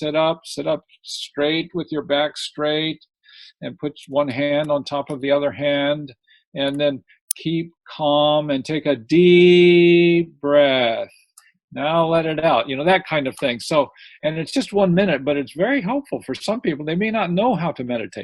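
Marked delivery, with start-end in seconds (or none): none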